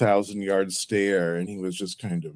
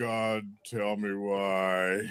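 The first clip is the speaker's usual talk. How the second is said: very slow deliberate delivery with why stretched out; 8 dB quieter than usual. Quoting the Punisher movie monologue: Dolph Lundgren impression. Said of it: "That's a pretty good Dolph".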